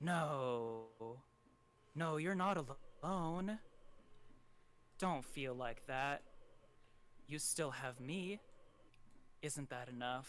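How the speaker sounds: soft half-whisper throughout, first "no" drawn out. Voicing a voice heard in dreams speaking to a character: half-whisper. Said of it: "you hear a whisper".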